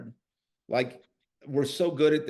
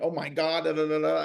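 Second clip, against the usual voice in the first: small, muted, mild, contained scream; 2 semitones higher than usual. Retelling a reaction to a bloody leg: imitating Sloan screaming.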